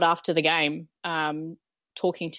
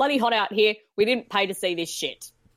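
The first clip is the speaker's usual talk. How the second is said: put-on yelling heckle, spectator-style; 4 semitones higher than usual. Retelling what a supporter yelled from over the fence: imitating a supporter yelling. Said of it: "this guy from over the fence yells out".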